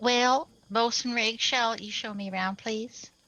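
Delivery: genteel, put-on Southern belle voice. Playing a character linking her arm into his, in a Southern Belle voice. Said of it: "in sort of a Southern Belle fashion".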